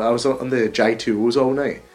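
mock Dundee Scottish accent. Retelling what a coworker said at work, imitating Becky's Dundee accent. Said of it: "She's from Dundee, she has a stupid accent".

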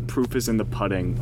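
ordinary talk, nothing marked

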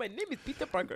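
heavy put-on Indian accent. Retelling a telemarketer's call on speakerphone: imitating a strong Indian accent. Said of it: "strong Indian sounding accent".

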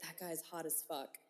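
close, soft, hushed whisper. Retelling what a sister said at the coat check: imitating sister whispering. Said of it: "whispers into my ear".

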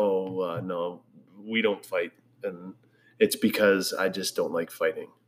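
ordinary talk, nothing marked

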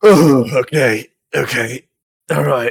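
choking while speaking. A sand elf chokes on his drink halfway through, choking while speaking. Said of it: "he starts choking".

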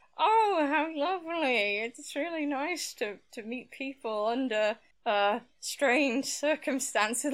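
mock angry seething through clenched teeth. Retelling how a player's character answered an old acquaintance, a gritted-teeth reply. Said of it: "responds through gritted teeth".

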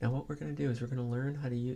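hushed, very quiet, barely audible lecturing murmur. Imitating how an accounting professor talked in class: imitating a very quiet professor. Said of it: "he's so quiet".

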